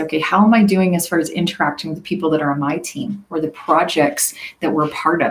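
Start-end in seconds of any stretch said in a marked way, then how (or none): none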